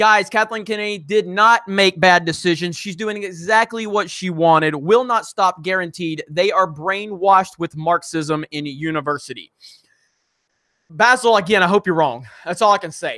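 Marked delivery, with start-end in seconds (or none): none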